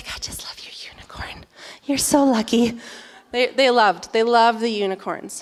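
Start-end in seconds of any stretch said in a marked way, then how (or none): 0.1-2.8 put-on soft, whispered, gushing little-girl voices. Retelling what little girls on the beach said about the unicorn: imitating girls whispering. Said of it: "they were whispering".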